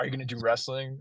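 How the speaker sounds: acted stern voice. Retelling how the wrestler father asked his kids about wrestling, mock-stern voice. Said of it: "said in a stern voice".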